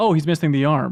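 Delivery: normal talking voice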